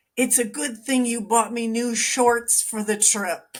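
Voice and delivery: easy, light calling out. Retelling what a father yelled across a restaurant: imitating someone yelling. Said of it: "he's yelling to my mother".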